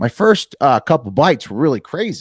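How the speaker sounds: put-on Wisconsin accent. Speaker quotes a man from Wisconsin about his first bites: imitating Tim's Wisconsin accent. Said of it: "I'm giving him that accent because he's from Wisconsin".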